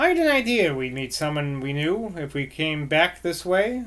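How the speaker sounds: plain reading voice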